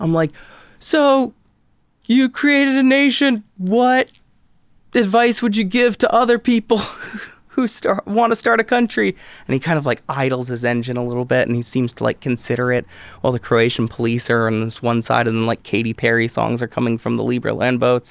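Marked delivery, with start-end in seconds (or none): 0.8-9.1 mock very high-pitched yelling. Recounting the trip, the speaker re-enacts yelling a question into a man's ear. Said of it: "I'm like yelling it in his ear".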